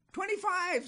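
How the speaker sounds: loud, very high, squeaky little demon voice. A small demon interrupts Satan in the story, squeaky small demon voice. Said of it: "squeaked a small interrupting demon".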